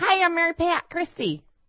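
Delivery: put-on high-pitched Midwestern accent. Guessing with others what she sounds like, do a Midwestern Mary Pat Christie voice. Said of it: "you're giving her like a Midwestern thing".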